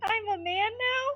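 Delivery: put-on high-pitched voice like a little child. Voicing Milo as he turns around during the game: Milo's little child voice. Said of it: "in his little child voice".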